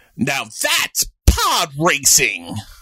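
very loud, slow, drawn-out delivery with big swoops. Doing a requested impression of a young actor's line reading: Jake Lloyd impression. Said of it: "Do your very best, Jake Lloyd".

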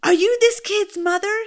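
very high-pitched, shrill, loud screaming. Retelling how a man charged over and screamed at her: imitating a man screaming. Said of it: "he's screaming at me".

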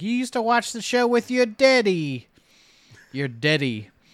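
high, loud, spooky voice. Retelling what the Crypt Keeper's actor said in a cameo, Crypt Keeper voice. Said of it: "but he's like".

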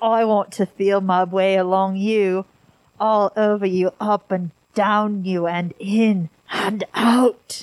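put-on British royal accent. Reading out a recorded phone call as Prince Charles: Prince Charles impression. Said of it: "I don't know where that accent".

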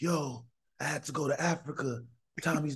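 slow, high narrator voice. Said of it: "I do my narration in [name]' voice".

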